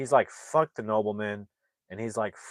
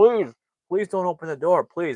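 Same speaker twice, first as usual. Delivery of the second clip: very loud, high, frantic, desperate begging; 8 semitones higher, 8 dB louder than usual. Retelling a tied-up man with a grenade in his mouth, acting out desperate begging. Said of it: "He's like begging for his life".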